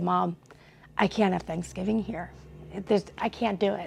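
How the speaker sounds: acted hysterical sobbing through broken words. Retelling a phone call to Mom: imitating own hysterical crying. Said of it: "in full hysterical crying".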